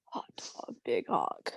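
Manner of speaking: whispered, breathy, smoky emo voice. Asked to do the emo Damien voice, repeating the phrase sounding like a smoker. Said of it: "I sound like a smoker".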